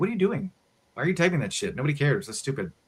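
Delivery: put-on high, fast toddler voice. Speaker voices the ADHD toddler in his brain, in a toddler voice. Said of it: "the A D H D toddler in my brain's going".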